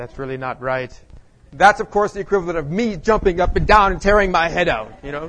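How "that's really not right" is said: muttered aside, much quieter and lower. Recounting how a man reacted to a comment, mutter it under your breath. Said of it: "John muttered under his breath".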